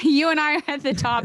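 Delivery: high voice, laughing through the words. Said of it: "Uh, I'm laughing".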